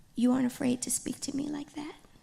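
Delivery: high voice, overly polite, politest possible manner. Speaker acts out what her 2010 self would say: mock-polite, softest voice. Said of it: "in my most polite, my softest voice".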